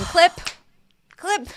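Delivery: mock very high-pitched, shrill shrieking yell. Recounting Michael Rappaport screaming at people on television, imitating Michael Rappaport screaming. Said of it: "screaming at people and going".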